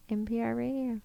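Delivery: soft whispery voice. On the podcast, starting the ASMR part, in a soft ASMR NPR voice. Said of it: "this is the part of the podcast where we do A S M R, and I just start talking like this".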